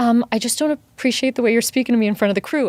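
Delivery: mock nervous, shaky speech. Retelling how he took the speaker aside: imitating someone nervous. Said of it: "he's shaking and he would be so nervous".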